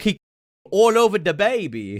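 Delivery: very high-pitched, slow, drawn-out voice. Recalling a favourite old clip for viewers: imitating Kavos. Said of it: "He's like".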